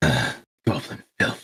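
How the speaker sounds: very low, quiet mutter under the breath. A narrator voices a character pulling her weapon out: muttered under her breath. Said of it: "under her breath, she mutters".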